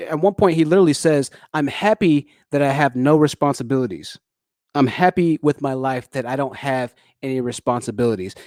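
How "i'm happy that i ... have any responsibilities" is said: ordinary talk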